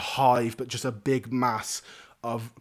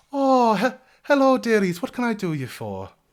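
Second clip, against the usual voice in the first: very high, kindly, sing-song motherly voice; 10 semitones higher, 6 dB louder than usual. Voicing a halfling woman greeting two newcomers: kindly halfling woman voice. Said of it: "she looks and goes".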